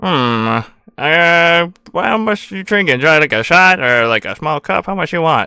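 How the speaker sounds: strange robotic voice-modulator voice. Game master voicing a robot bartender haggling with a customer: odd robotic bartender voice. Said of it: "and your eyes only just go to the bartender because he is the shiniest thing there. / Is something wrong with your voice modulator? No, that's how it's always sound like".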